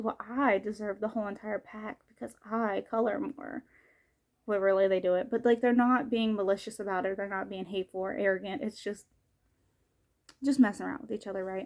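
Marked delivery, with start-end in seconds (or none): none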